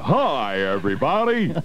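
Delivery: loud, booming on-air radio DJ voice. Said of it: "Dave's got a very loud voice".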